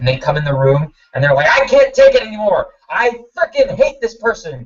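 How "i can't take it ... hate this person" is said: furious, angry screaming, pitched up. Showing how an angry person yells on entering: imitating an angry yell. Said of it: "the person's yelling, and the person's screaming".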